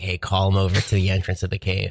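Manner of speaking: ordinary delivery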